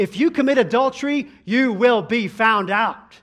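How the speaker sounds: loud, thundering, booming radio preacher voice. Retelling how a man flips on the radio and hears a preacher: booming preacher's voice. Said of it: "out comes booming this preacher's voice".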